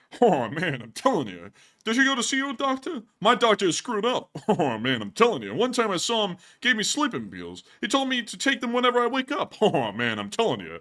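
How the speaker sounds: belted out like a stand-up comedy bit. Doing a Rodney skit someone sent over: Rodney Dangerfield voice. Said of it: "this is a Rodney skit right here".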